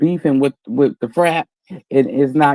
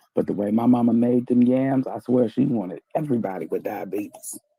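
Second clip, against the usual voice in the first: hushed half-whisper, under the breath; 3 semitones lower, 8 dB quieter than usual. Someone is right by the speaker's window, so this part is told half-whispering. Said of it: "I'm gonna have to whisper this part".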